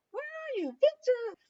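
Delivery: very high voice calling out.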